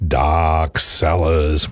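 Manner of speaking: very low, eerie, spooky haunted-house voice. Announcing a Halloween event, the presenter puts on a spooky voice. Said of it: "put on spooky voice".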